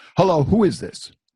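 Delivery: irate woman snapping, very angry, high and loud. Retelling how a woman answered the speaker's phone call, imitating a very angry woman. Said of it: "she also sounded very angry".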